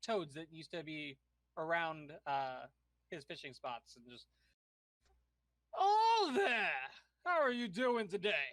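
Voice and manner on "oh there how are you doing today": loud, resounding, big booming voice, swooping. A player voices a fisherman character greeting the Grung: booming voice. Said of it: "kind of like a booming voice".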